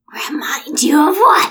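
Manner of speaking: very loud, shrill, strange robot-creature voice. Taking a turn imitating a droid's voice: Gollum-like droid voice. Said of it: "That was like Gollum does the Droid".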